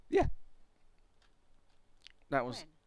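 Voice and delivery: deliberate, purposeful cracking voice. Answering a question about a game ability, voice cracking. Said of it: "That was a purposeful um, voice crack".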